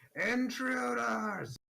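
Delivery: very high, booming, loud alarmed shout. Voicing a figure calling from deeper in the halls: much louder voice. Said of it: "you hear a much louder voice".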